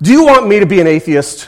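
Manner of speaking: loud, high, exasperated male scream. Retelling a comic strip boy's outburst at the sky: imitating a boy screaming. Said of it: "finally he screams at the sky".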